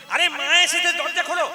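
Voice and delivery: loud, high-pitched pleading.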